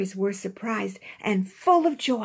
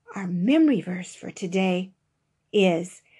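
usual speaking voice

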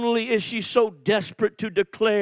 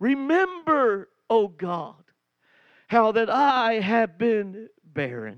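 acted sobbing prayer voice

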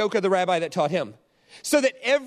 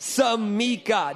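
extra gusto, more enthusiastic. Leading a group in saying a word, one more time, with more gusto. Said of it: "One more time with one more level of gusto up".

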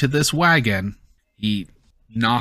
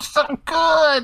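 very high, muffled, smothered squeak. Voicing her eating a Snickers inside his overalls pocket, muffled voice from a pocket. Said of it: "You just hear muffled".

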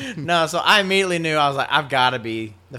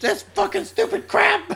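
acted half-shout, pitched way up. Retelling yelling at a crab on the far side of the beach: imitating own past yelling. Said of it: "You hear me over there yelling".

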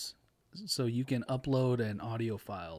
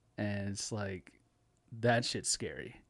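normal talking voice

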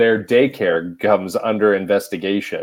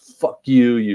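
put-on screaming; 4 semitones higher than usual. Recounting a fight with their dad, retelling screaming at dad. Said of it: "I'm like screaming at him".

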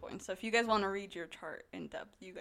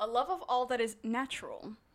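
usual speaking voice

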